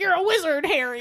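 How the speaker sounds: loud yell. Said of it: "He'll yell it as loud as he could".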